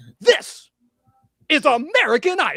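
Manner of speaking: slow put-on announcer voice. Doing a quick impression of a TV host: bad Ryan Seacrest impression. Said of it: "here's my impression of Ryan Seacrest".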